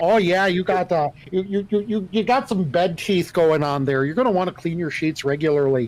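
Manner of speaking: Minnesota accent, Duluth-style tech support voice. Giving advice as a tech support caller: Duluth, Minnesota tech support voice. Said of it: "the tech support voice".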